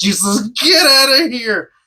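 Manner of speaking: through clenched teeth. Show the annoying thing she does in her acting, imitating Michelle Trachtenberg talking through her teeth. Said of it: "when she talks through her teeth like this".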